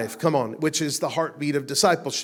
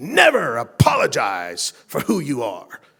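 rolling pulpit preaching cadence, loud and slow; 5 dB louder than usual. Speaker quotes a minister's advice given in the car, in Roberts's preacher voice. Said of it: "his preacher voice".

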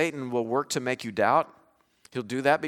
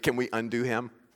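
ordinary talk, nothing marked

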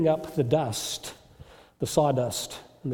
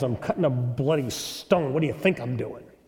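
very surly, rude, bad-tempered retort; 2 semitones lower than usual. Telling a story of a stone cutter answering a visitor: very surly voice. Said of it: "in a very surly voice".

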